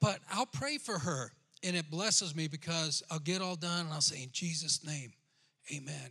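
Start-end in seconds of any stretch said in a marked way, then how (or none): 4.2-6.1 whispered delivery. Retelling praying for someone at four in the morning: imitating own whisper. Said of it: "I'm trying to, like, whisper".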